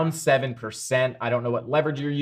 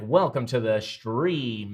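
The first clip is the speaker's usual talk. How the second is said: slow, put-on radio announcer voice. Welcoming a viewer to the stream, in a radio voice. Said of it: "That's my radio voice".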